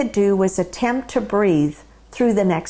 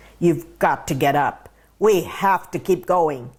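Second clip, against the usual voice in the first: deep, low baritone dad voice impression; 3 semitones lower than usual. Recalling dad at the bedroom door the morning after the accident; dad's deep baritone voice. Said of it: "in his deep baritone voice".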